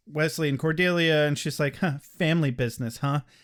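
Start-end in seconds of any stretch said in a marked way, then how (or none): 1.7-3.2 put-on disdainful voice. Retelling how a character reacts to the family business: imitating disdainful Bethany. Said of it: "you really have a lot of disdain for that word".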